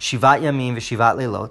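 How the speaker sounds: ordinary talk, nothing marked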